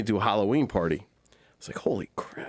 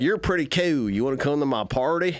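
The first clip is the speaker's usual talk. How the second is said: put-on mocking voice, pitched higher; 4 semitones higher than usual. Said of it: "you just did what you've watched me get screamed at by my wife for".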